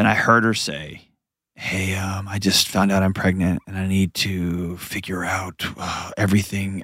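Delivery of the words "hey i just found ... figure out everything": hushed voice, lower and quieter. Retelling a student's words to an office admin, imitating someone speaking quietly. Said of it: "it was this very hushed, quiet".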